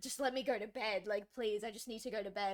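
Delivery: put-on tearful pleading, near tears. Speaker retelling begging their dad to let them go to bed; retelling tearful pleading. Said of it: "I was on the verge of tears".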